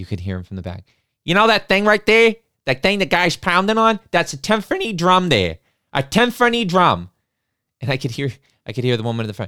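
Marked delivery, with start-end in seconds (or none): 1.2-7.1 put-on heavy Boston accent laid on thick, pitched up. Speaker retells a gentleman at the back calling out during the orchestra, thick Boston accent. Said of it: "in a very thick Boston accent".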